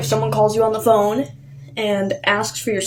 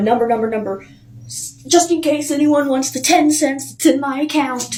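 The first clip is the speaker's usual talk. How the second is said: put-on old woman voice losing it, mild, light yell; 4 semitones higher than usual. Retelling how an old woman yelled across a store: imitating her yelling. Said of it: "she literally yells".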